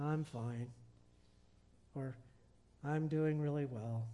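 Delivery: flat level voice. Speaker illustrating an 'Eeyore faith' to listeners, in an Eeyore monotone voice. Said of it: "Eeyore faith".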